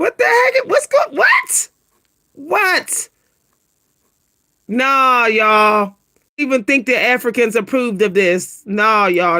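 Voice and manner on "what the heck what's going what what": voice jumping up to very high pitch. Reacting to what you're looking at, voice going really high. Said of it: "My voice go real high".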